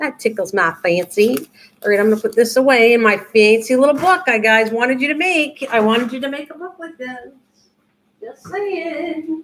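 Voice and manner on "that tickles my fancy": easy, leaned-into Southern drawl. Saying a favorite phrase while crafting: Southern accent. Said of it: "gonna start talking Southern there".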